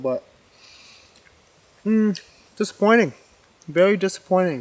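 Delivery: speaking with mouth full of food. Reviewing a Walmart sirloin while eating it, talking with mouth full. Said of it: "I know I'm talking with a mouthful".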